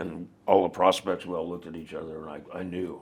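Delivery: ordinary delivery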